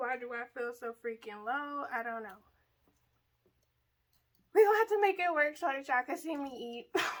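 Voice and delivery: out of breath, winded. Opening a food video to viewers after moving stuff around, out of breath. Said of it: "Sorry I sound so out of breath".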